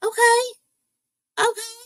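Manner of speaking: high, patronising, condescending okay, okay. Imitating a female attorney saying okay to witnesses: imitating a condescending tone. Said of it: "this one with their okays".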